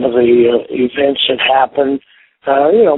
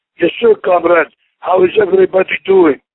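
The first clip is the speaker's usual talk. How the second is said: fake Russian accent, played up, high and swooping; 6 semitones higher than usual. As the Russian Bear, a former wrestling champion, answer the host on the line in a put-on Russian accent. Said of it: "I love the accent".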